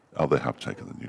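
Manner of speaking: hushed whisper under the breath. Noticing during commentary that the new ball was taken: whispering. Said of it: "I don't know why I whispered it then".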